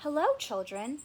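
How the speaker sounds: sweet, honeyed voice. Reading a children's story: Miss Nelson greets the class in a sweet voice. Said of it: "someone said in a sweet voice".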